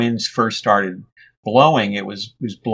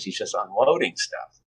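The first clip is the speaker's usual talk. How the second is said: ordinary delivery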